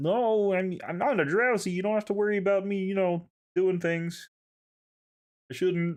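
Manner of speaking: mock frog puppet character voice. Voicing Uncle Flapple inviting kids onto his yacht: Kermit voice. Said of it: "made him turn into Kermit".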